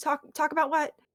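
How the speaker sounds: faltering, uncertain, tentative and halting. Narrating a game, an unseen voice answers the players: very softly spoken. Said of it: "very softly you hear".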